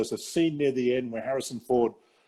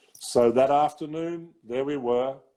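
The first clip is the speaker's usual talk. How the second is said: ordinary talk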